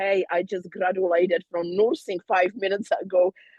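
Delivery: ordinary delivery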